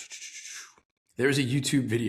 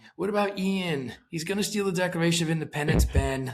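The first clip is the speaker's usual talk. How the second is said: mock nagging whine, high and whiny; 5 semitones higher than usual. Quoting a movie character complaining about a theft: imitating a whiny line. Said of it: "just this whiny".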